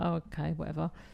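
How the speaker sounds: grudging, reluctant, indifferent tone. Retelling how a man agreed to something: imitating a reluctant reply. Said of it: "He reluctantly w-, did it".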